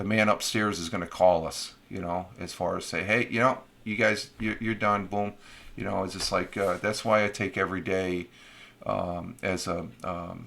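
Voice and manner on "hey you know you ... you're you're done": ordinary talk, nothing marked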